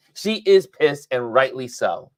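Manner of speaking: plain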